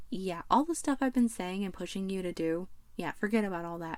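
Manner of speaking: ordinary talk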